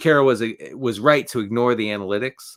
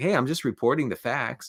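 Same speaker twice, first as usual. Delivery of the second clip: defensive broadcaster voice, pitched higher; 4 semitones higher, 4 dB quieter than usual. Imitating a broadcaster answering a challenge: defensive Joe Buck impression. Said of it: "he was like".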